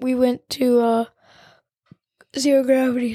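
speaking through a yawn. The speaker recounts a day out with friends, yawning. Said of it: "Sorry, I'm yawning right now".

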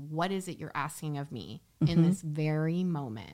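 plain

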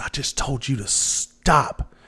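mock slow, drawn-out yell. Recounting a woman who yelled after being called a nickname again; retelling a yell. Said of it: "and she yelled at me".

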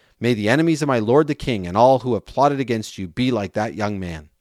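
ordinary talk

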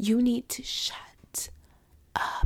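hushed, slow, soft whisper.

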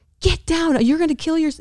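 high-pitched mock yell. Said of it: "He's screaming at me".

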